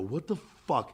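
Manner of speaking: soft, muted, furious angry outburst. Retelling confronting a man who walked away: retelling an angry outburst. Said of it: "I was so angry".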